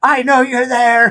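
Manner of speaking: very high, shrill, loud yell. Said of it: "he's yelling at the boat".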